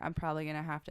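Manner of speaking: put-on flat, zero-emotion deadpan delivery. Retelling what the orthopedic surgeon said: imitating zero-emotion delivery. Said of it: "he said it with, like, zero emotion".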